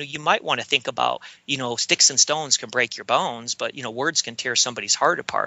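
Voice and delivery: ordinary talk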